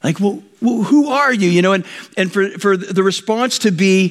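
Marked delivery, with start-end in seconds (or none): 0.2-1.5 acted frightened whisper, higher pitch. Acting out Paul answering the voice from heaven: imitating a terrified whisper. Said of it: "barely whispering that 'cause he was terrified".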